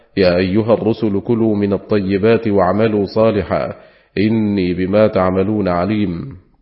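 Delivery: ordinary talk, nothing marked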